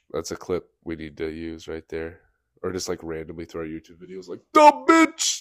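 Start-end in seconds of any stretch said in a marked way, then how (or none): 4.5-5.4 piercing shriek, very high and very loud. Showing how to use a crude word for impact: screaming. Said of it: "sorry for screaming that in your ear".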